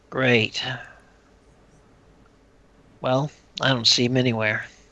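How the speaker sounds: dry, flat, deadpan mocking sarcasm. Voicing a character's line marked 'in a sarcastic tone': sarcastic. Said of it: "in a sarcastic tone, sort of".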